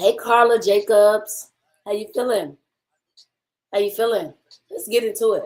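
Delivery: loud voice, worn and going. Greeting chat on a live stream with a cold, voice going from a cold. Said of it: "Did not know my voice would sound like this".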